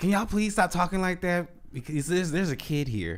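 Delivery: very polite, high, little voice.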